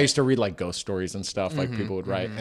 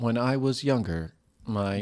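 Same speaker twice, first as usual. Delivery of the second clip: mock text-to-speech robot reading voice. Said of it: "the robot voice reading it".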